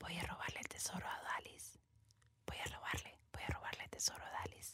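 tiny, little, very hushed whispering voice. Retelling a story where someone wakes to whispers, imitating the whispering little voice. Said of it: "susurros de una vocecita".

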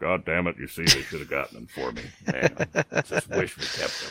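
very low-pitched, complaining, griping voice. Imagining Aaron Rodgers watching ESPN at night, Aaron Rodgers impression. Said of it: "That's a good impression of Aaron Rodgers".

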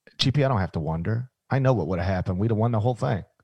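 low, flat, monotone coach voice.

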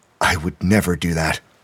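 usual speaking voice

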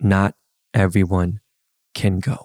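slow, drawn-out, deliberate, weighing each word. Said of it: "I said that slow".

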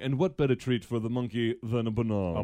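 posh, very fancy British narrator tone. Retelling a news report about a monkey: fancy British voice. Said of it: "some very fancy British voice going".

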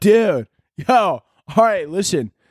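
southern frat-guy military officer voice. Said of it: "a southern accent mixed with a frat guy voice".

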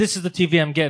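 ordinary talk, nothing marked

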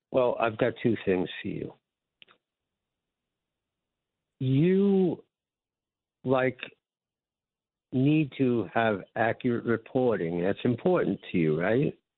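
very slow, drawn-out speech. A caller on line six answers the host, talking really slow. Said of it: "you're talking really slow, like you've had something to drink".

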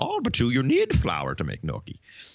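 swooping voice like a little sage. Retelling a judge's question about flour in a Confucian way: Yoda-like voice. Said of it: "it was like Yoda there".

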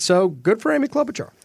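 exaggerated fake cheerfulness.

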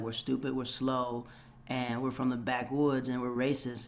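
ordinary talk

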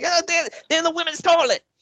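mock, very high, outraged ranting fit. Retelling how Dusty Rhodes reacted: imitating a conniption fit. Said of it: "had a conniption fit over it".

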